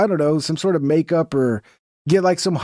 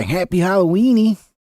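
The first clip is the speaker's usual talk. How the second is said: goofy, put-on animated cartoon character voice; 2 semitones higher than usual. Greet everybody for Halloween in the diddler from Family Guy voice. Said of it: "I want to say it like the diddler from Family Guy".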